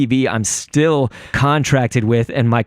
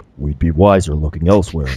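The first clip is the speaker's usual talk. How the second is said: super deep, way down low voice; 8 semitones lower than usual. Imagining a Zelda dress-up, the speaker does Impa's super deep voice. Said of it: "like Impa like having a super deep voice".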